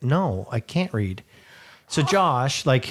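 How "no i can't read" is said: play-acted downcast, sorrowful, sad tone. Retelling the counter girl's answer to the question: imitating a sad reply. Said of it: "sad and says".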